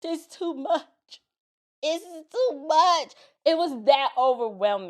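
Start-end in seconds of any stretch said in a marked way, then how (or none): 0.0-3.1 acted-out crying, overwhelmed, pitched up and slow. Retelling being overwhelmed after a segment ended: imitating own past crying. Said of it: "And I'm crying".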